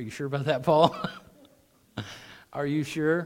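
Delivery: chuckling through words. Questioning a verse about shame, laughing while talking. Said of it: "the reason why I'm laughing about it".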